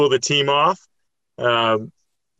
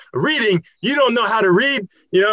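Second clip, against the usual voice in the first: put-on annoyed voice, higher pitch and faster pace; 9 semitones higher than usual. Retelling Peter accusing the speaker of drinking: imitating Peter pissed off. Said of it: "And he's like pissed off".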